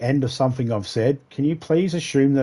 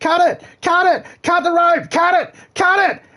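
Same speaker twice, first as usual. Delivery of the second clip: very high, shrill, loud, insistent repeated screaming; 5 dB louder than usual. Retelling a boat captain shouting at a swimmer: imitating a captain screaming. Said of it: "the captain of the boat kept screaming".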